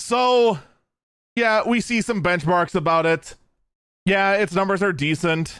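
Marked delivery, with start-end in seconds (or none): none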